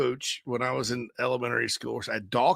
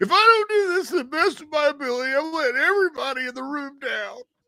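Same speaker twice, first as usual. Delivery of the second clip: put-on, very high, thin, whiny voice; 14 semitones higher than usual. Retelling how he sounded earlier: whiny voice, imitating himself. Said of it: "like that whiny".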